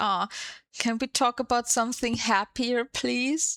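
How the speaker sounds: fake crying, put-on sobbing, tearful pleading tone. Retelling a conversation where she started fake crying, imitating fake crying. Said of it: "she starts like fake crying".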